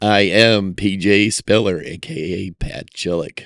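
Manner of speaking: slick, smooth-talking delivery. A podcast co-host introduces himself to listeners, in a smooth voice. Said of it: "Sounding smooth over there".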